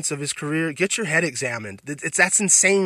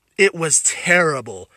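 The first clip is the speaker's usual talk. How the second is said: plain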